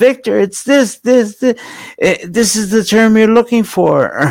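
mock, high-pitched yelling. Retelling how a friend yelled at the program: imitating someone yelling. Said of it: "she was yelling at".

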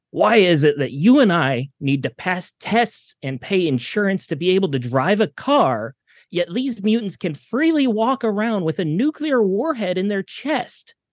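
raving ranting tirade. Voicing an anti-mutant pundit on the news: Benedict Ryan ranting and raving. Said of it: "immediately starts ranting and raving".

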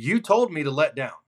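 completely serious and earnest, no joking at all. Retelling his answer after being told to let down: imitating a dead-serious reply. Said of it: "he is completely dead serious".

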